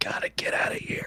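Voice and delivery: soft, hushed, whispered aside. A player's character backs away, whispering to a companion. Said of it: "whispering to Gentle Thing".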